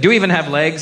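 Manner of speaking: plain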